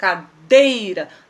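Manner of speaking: cadeira with the syllable dei stressed. Teaching Portuguese stress without a written accent: stress on dei in cadeira. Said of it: "o D eu falo com muita força".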